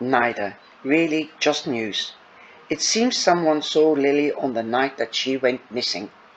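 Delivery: ordinary delivery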